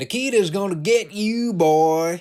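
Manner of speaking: very high Southern drawl. Retelling a fan's shout at the wrestler: imitating a Southern redneck fan. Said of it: "that accent on top of that particular line".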